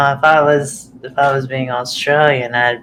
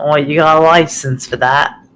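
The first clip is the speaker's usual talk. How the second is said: put-on, mock English accent. Joking about a potato peeler, deliver the line in a put-on English accent. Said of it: "that was English".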